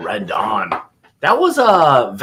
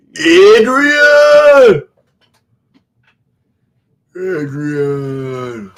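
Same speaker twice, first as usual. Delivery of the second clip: bad, loud, drawn-out call; 6 semitones higher, 8 dB louder than usual. Calling out for Adrian as Rocky: terrible Rocky impersonation. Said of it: "that terrible impersonation".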